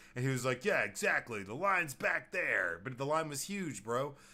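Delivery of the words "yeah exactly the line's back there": loud put-on old man voice.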